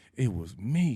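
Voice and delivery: put-on, proud, pleased announcing tone. Retelling the moment old timers asked who made the coffee: retelling own proud reply. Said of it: "being so proud and being like".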